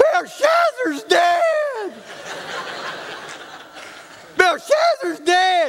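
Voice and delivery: put-on, high, drawn-out little girl's outcry. Retelling a little girl who screams out a line: imitating a girl screaming. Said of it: "she just screamed out".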